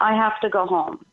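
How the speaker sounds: ordinary talk, nothing marked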